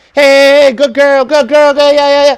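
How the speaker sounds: very high, loud, lively, animated praising voice. Demonstrating how to call back a dog that wanders off bored, animated dog praise. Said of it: "I want you to be animated".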